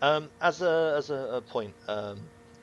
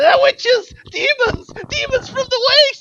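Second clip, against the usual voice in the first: yelling, much higher and louder; 15 dB louder than usual. Game master voicing enemies as the attack goes badly, yelling out. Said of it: "they're yelling out".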